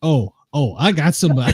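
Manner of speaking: ordinary talk, nothing marked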